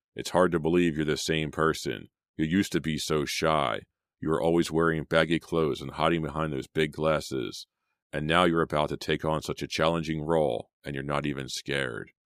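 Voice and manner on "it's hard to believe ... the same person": ordinary delivery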